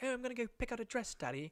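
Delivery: put-on very high, all-excited, girlish British accent. Retelling a film scene where the daughter speaks: British accent.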